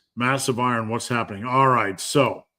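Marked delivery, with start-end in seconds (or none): none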